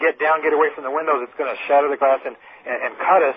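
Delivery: ordinary talk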